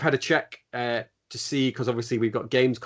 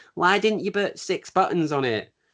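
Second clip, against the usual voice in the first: put-on whingeing whine, pitched up; 7 semitones higher than usual. Imitating negative comments on Twitter in a put-on whiny voice. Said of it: "I'm gonna do this is my whiny voice".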